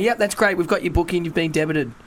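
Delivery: ordinary delivery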